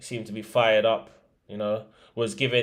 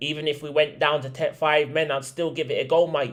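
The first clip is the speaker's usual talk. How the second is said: dodgy, terrible put-on Australian accent; 4 semitones higher than usual. Quoting a football manager's post-match interview line, as a bad Ange Postecoglou impression. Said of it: "That's a terrible Aussie accent".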